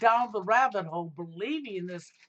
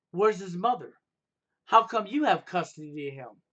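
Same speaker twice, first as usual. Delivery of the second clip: put-on snotty voice. Retelling a female acquaintance's question about custody: imitating a snotty tone. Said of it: "she said it in a snottish way".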